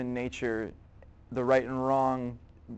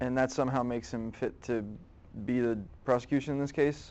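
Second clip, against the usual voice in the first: ordinary delivery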